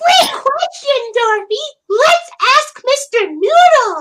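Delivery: very high, loud, slow, drawn-out puppet voice. Showing own version after a viewer asks for Elmo. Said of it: "I do it like".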